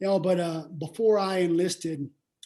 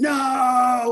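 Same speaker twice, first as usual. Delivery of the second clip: angry yell, higher and louder; 6 semitones higher, 7 dB louder than usual. Retelling telling dad about enlisting: imitating dad yelling. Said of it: "he yelled at me".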